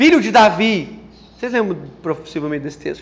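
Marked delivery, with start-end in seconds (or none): 0.0-1.0 put-on voice, crying out, loud and raised. Retelling how a blind man called out to Jesus: imitating a blind man shouting. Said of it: "Ele grita assim".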